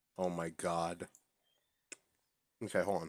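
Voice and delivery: talking while chewing. Reacting to a joke mid-bite: chewing while talking. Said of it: "you caught me chewing right now".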